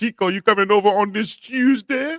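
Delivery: put-on very high-pitched voice with a Greek accent. Explaining where your way of saying Tuesday comes from, imitating a Greek friend. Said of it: "my Greek friend who said ... he used to always say it like that".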